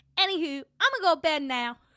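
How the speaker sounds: high-pitched, very loud yelled delivery. Repeat what she said leaving her Twitter spaces, in a high-pitched Hawk Tuah girl voice. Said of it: "That's what I feel like".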